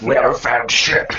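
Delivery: gruff, loud, gravelly growl. Retelling another player's dwarven report: gravelly growl. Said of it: "In one gravelly growl, he just goes".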